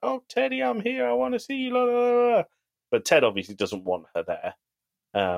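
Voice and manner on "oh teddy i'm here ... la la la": put-on very high, boy-howdy Kansas-y voice. Retelling Ted's mom greeting him on the bench: Kansas-y boy howdy voice. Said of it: "in very Ted Lasso, Kansas-y kind of boy howdy kind of way".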